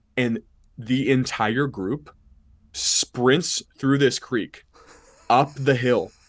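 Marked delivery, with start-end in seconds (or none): none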